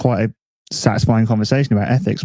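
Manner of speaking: ordinary delivery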